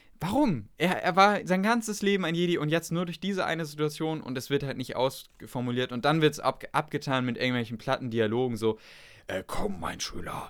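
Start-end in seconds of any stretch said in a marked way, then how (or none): 9.3-10.5 put-on, deep, hushed epic voice. Mocking flat film dialogue, the speaker plays a Jedi calling his student: put-on deep epic voice. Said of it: "ich habe so eine tiefe Stimme".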